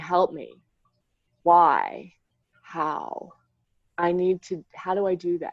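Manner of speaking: mock ugly-crying, crying out through sobs. Retelling own pleas to a higher power: imitating own sobbing plea. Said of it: "me laying on the floor sobbing, ugly crying".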